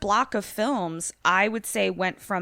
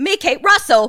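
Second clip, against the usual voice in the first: accidental put-on Cockney accent, much higher; 7 semitones higher, 11 dB louder than usual. Asked to say a name in an Australian accent, [name] produces: accidental Cockney accent. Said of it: "that was Cockney".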